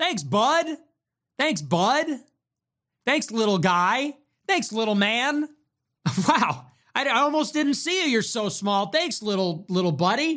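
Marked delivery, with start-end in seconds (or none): 1.4-10.4 playful teasing, much higher and slower. Streamer thanking a viewer for a super chat, teasing. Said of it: "I'm teasing you".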